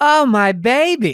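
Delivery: high worried cry. Retelling grandma seeing her son hurt: imitating grandma's worried cry. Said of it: "my grandma goes".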